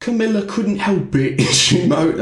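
put-on British accent. The speaker tries out an accent for the others: British accent. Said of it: "Let me try for a British accent".

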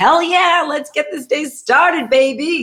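very high, pumped-up, all-excited hype voice. Speaker acts out a Tuesday-morning self starting the day, mock-excited. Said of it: "like all excited".

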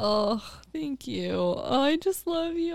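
sobbing, soft, high, tearful voice. Thanked by a friend during a birthday month: crying. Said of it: "I'm crying".

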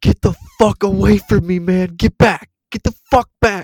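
shrill screaming at very loud volume. Retelling a man at the self-checkout screaming at the speaker: retelling a man screaming. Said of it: "started screaming".

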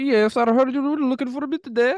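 put-on very high, loud Indian accent. Redoing the voice of a guy on a government website line, fake indian accent. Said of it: "the dude sounds like he's in India".

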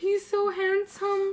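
very high, slow, swooning auntie voice. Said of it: "And they were like".

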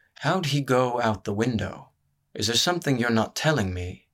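murmured, quiet, slightly accusing tone. Narrating a story, a man questions Amitha, faintly accusatory. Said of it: "His voice sounded faintly accusatory".

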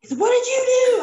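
shrill, very high, loud scream. Retelling how a roommate reacted to a dishwasher full of bubbles: imitating a roommate screaming. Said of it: "He's just screaming".

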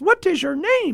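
very high-pitched, squeaky little voice. Retelling a waiter who ran up to him on the street, in a high-pitched voice. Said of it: "in a high-pitched voice".

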